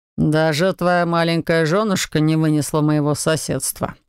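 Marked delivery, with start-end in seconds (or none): none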